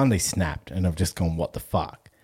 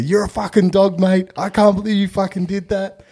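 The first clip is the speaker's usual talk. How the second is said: put-on very high, shrill screaming in suburban Australian accent; 13 semitones higher, 8 dB louder than usual. Retelling an old guy banging the glass and screaming at them in the box; Australian accent screaming. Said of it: "like suburban Australia".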